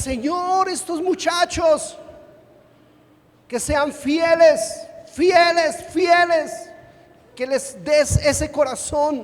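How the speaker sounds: high, shouted, crying-out preacher-style voice. Retelling how a pastor prayed for the young people: imitating a pastor shouting in prayer. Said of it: "Y él gritaba y decía".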